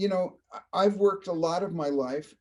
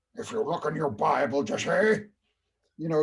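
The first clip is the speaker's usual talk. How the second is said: overdone, exaggerated old Hollywood director voice. Retelling DeMille walking in on a man packing his things, DeMille voice. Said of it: "I I use that voice".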